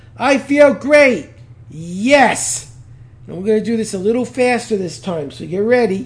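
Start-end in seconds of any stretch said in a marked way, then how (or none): 0.2-1.3 loud, slow, forceful delivery. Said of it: "say this like you mean it".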